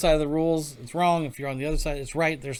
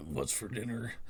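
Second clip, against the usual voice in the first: put-on old cowboy voice, lower and quieter; 3 semitones lower, 11 dB quieter than usual. Giving the name of the oldest movie cowboy: Sam Elliott voice. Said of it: "what the Sam Elliott, yeah, there you go".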